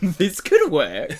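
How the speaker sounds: high, very slow, loud mock clueless producer voice. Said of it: "they're like".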